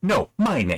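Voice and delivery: fed-up, frustrated, exasperated tone. Showing how a frustrated interrogator should deliver his line: frustrated. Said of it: "'cause he's frustrated".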